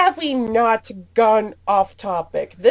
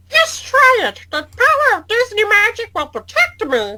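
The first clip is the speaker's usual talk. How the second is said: high, swooping cartoon mouse character voice; 8 semitones higher than usual. Replying as Mickey to a taunt aimed at him, Mickey Mouse impression. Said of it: "trying to do that Mickey Mouse impression".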